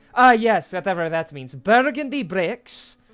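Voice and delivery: put-on Scottish-accented voice. Voicing a character describing a house's bricks: Scottish accent. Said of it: "turning, like, Scottish all of a sudden".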